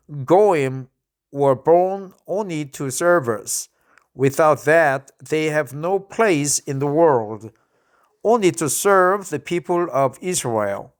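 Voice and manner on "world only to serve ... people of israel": ordinary talk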